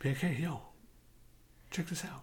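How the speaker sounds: creepy, breathy whisper. Acting out how listeners might share the show: imitating a creepy whisper. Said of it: "But they whisper it, so it's, like, kinda creepy".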